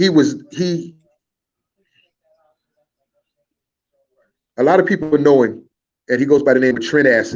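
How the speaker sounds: teary-eyed. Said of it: "I'm a little teary-eyed".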